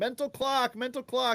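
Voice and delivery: frantic high-pitched screaming. Retelling screaming from the couch during a play: imitating own screaming. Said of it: "sitting there on my couch screaming".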